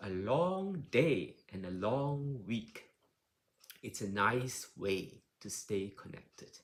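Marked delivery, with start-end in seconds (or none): 0.0-2.8 long, slow, drawn-out, raised delivery. Showing how to say a phrase, with a stretched-out word long. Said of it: "when you say long, you can stretch it out".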